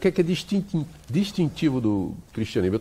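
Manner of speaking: stumbling over distintivo. Asking a guest a question on the show, stammering a bit. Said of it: "Eu estou meio gaguejando hoje".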